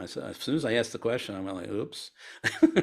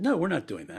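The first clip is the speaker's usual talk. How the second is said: raised-pitch judgmental voice; 6 semitones higher than usual. Retelling how he once answered his wife, in a judgmental tone. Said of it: "with a judgmental tone".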